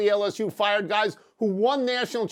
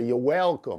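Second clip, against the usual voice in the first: put-on Southern accent; 9 semitones lower than usual. Repeating a reply the way Brian Kelly would say it: Brian Kelly Southern accent. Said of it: "Let me say it like Brian Kelly would say".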